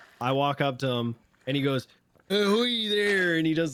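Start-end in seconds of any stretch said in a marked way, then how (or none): 2.3-3.4 full pirate character voice, high-pitched. Retelling a friend's greeting outside the apartments: Whitley Booth pirate voice. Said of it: "his whole Whitley Booth".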